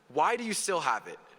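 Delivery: normal talking voice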